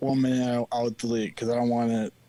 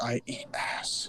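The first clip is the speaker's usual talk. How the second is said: hushed whisper, under the breath; 8 dB quieter than usual. Telling the others the words for a hat: whispering. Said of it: "Why'd you whisper it".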